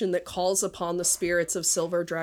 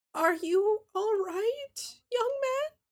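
put-on very high-pitched old-lady voice. Voicing a soaked grandmother asking a young man if he's all right: voicing the grandmother. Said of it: "Her brow sort of furrowed in this despondent look".

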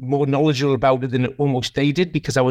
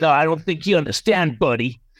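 put-on American accent; 2 semitones higher than usual. Retelling a phone call from John: American accent imitating John McMahon. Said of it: "when I do an American accent, it's always a John McMahon accent".

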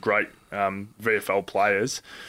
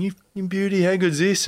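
mock screaming at a very high, shrill pitch; 10 semitones higher, 3 dB louder than usual. Retelling a player manager's voicemail: imitating Peter Lenton screaming. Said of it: "he was screaming down the phone going".

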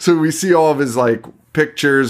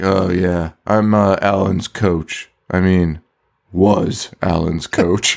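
mock mopey, sad voice, pitched lower; 5 semitones lower than usual. Retelling a movie scene as the coach: imitating a sad mopey coach. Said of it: "he's sadder than Alan about the whole fucking thing".

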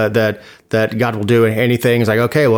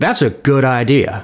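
slow, mocking, sarcastic drawl. Joking that God approves an executive order: sarcastic. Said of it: "you say that sarcastically".

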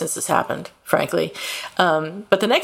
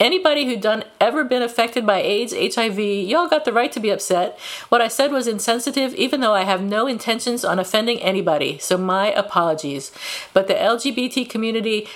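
usual speaking voice

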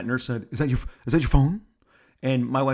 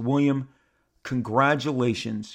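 normal talking voice

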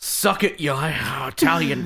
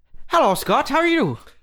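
put-on Irish accent, very high-pitched, bantering; 11 semitones higher than usual. Host starting accent banter with another host, irish accent. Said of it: "You want to do a little Irish banter back and forth?".

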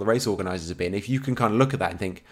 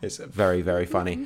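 ordinary delivery

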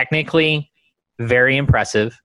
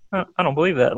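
quiet mumbled aside under the breath; 3 semitones higher than usual. Retelling a movie scene, imitating Kermit: Kermit muttering under his breath. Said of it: "That little aside of".

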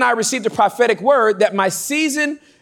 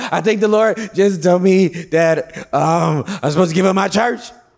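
mock ugly crying, much lower; 4 semitones lower than usual. Retelling an early-morning phone call to a man, the speaker imitates ugly crying. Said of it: "Ugly crying".

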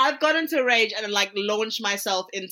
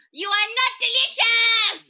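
mock very high, shrill shrieking scream; 14 semitones higher, 4 dB louder than usual. A player recalls their character launching at the yam, retelling a scream.

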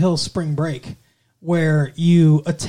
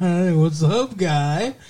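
mock tipsy woman's voice. Retelling what a character says after getting tipsy: imitating a tipsy woman. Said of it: "she gets nice and tipsy, and she's like".

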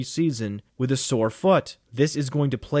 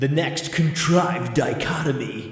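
slow, goofy, silly put-on funny voice. Announcing the next question segment in a put-on funny voice. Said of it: "I just like that voice".

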